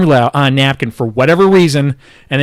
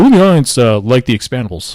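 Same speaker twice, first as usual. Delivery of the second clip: presenter voice addressing a crowd. Retelling a speaker asking the audience a question, imitating Neil's voice. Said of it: "I'm trying to voice".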